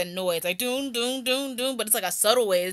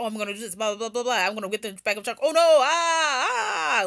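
very fast, rattled-off old cartoon dub voice. Describing old 1960s anime dubs, fast Speed Racer dub voice. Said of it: "Speed Racer would speak so fast".

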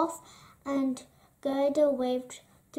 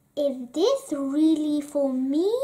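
ordinary delivery, nothing marked

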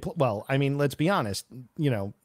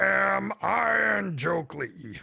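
put-on puppet-monster voice, pitched much higher; 6 semitones higher than usual. Saying a new name out loud on the show, in Cookie Monster voice. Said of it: "I like the Cookie Monster voice".

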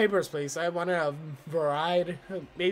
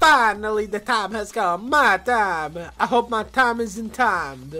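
booming, very loud, badly done Italian accent; 4 semitones higher, 9 dB louder than usual. Voicing a game character's intro line, in a bad Luigi Italian accent. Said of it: "I butchered that Italian accent so bad".

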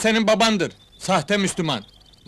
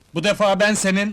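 ordinary talk

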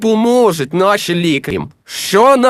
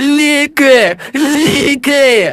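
crying out loudly, yelling; 7 semitones higher than usual. A character calling out the same word twice, yelling. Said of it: "не кричи".

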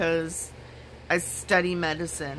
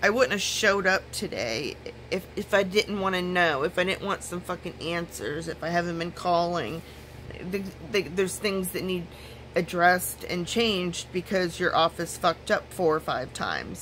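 ordinary talk, nothing marked

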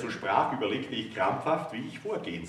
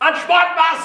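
roaring, much higher pitch and much louder; 15 dB louder than usual. The narrator yells at a woman who has just cut him off, roaring. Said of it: "brüllte ich".

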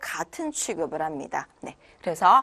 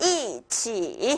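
first syllable 이 drops down in fourth tone. Tone-change lesson, third tone becomes fourth: falling fourth tone on 이 of 이치. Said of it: "이치 이렇게 사성으로 읽어주셔야겠네요".

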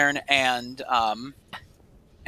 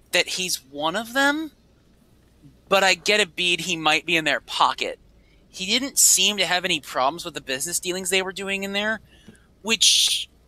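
usual speaking voice

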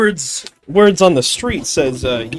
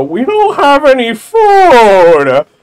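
very slow, gloomy, mopey swooping drawl, "food" stretched; 7 semitones higher, 13 dB louder than usual. Retelling how Gorons acted in Ocarina: imitating a depressed Goron. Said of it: "depressingly get up and go".

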